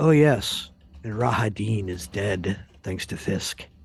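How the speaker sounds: whispering in character. Leaning in to tell a character secret news: whispering in character. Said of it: "I do walk up into him and I whisper".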